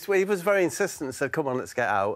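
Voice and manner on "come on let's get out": normal talking voice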